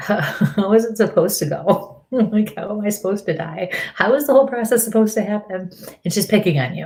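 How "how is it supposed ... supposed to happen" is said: chuckling while speaking. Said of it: "she kind of chuckles at you and says".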